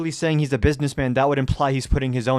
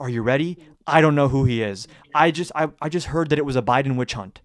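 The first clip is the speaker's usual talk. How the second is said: ordinary talk, nothing marked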